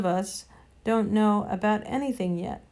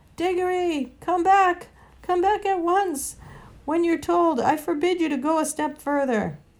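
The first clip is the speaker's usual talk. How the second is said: timid, trembling, half-hearted shout, pitched up; 8 semitones higher, 3 dB louder than usual. An uncle, standing a good way off, calls after the boy, half-hearted trembling shout. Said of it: "standing trembling in his button boots a good way off and shouting, but by no means at the top of his voice".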